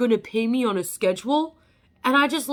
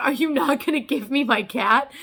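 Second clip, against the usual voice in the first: put-on bawling, tearful crying. Retelling a plea to get a cat back, acting out bawling. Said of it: "I'm just bawling".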